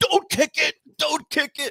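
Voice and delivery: put-on very high, drawn-out fan scream. Retelling listening to a game on the radio: imitating own screaming. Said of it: "I was screaming like".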